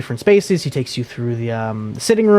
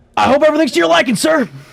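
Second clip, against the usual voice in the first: very high-pitched, anger held behind strained politeness; 14 semitones higher, 3 dB louder than usual. Voicing a red-faced halfling chef who finds a guest: halfling chef holding back anger. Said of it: "he is just red in the face ... he's like".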